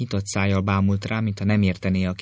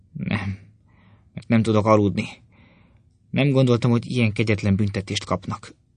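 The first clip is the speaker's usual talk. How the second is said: ordinary delivery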